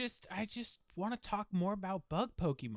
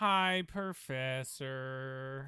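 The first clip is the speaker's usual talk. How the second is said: flat, unenthusiastic, low energy, lower pitch; 3 semitones lower than usual. Greeting the professor in class on cue: low energy. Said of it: "you don't have the energy you normally do".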